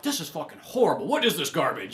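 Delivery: ordinary talk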